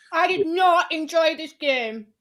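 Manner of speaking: talking through a mouthful of food. Introducing tonight's eating competition game, talking with mouth full. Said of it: "with a mouthful of food".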